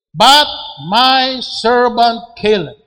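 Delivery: emphatic, loud, slow proclaiming.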